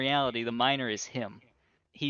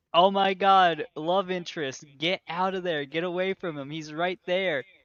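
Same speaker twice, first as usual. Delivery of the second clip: mock yelling, calling out; 4 semitones higher, 3 dB louder than usual. Retelling a movie scene where the son warns the love interest: imitating someone yelling a warning. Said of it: "And Sun is yelling".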